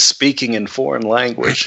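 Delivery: ordinary delivery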